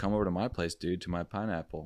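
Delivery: ordinary delivery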